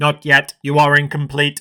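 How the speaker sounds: flat, monotone, mechanical robot voice. Recapping a show, the creature answers the Doctor in a robot voice. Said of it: "In a robot voice".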